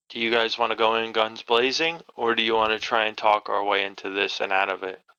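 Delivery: whispered aside. Voicing a character asking the group how to approach: whispering in character. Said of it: "I whisper".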